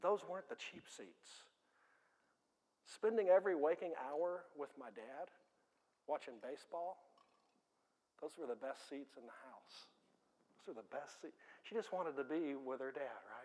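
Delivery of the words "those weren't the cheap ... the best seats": softened, much quieter delivery. Retelling a daughter's reply to her father: much softer voice. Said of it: "in a much softer voice".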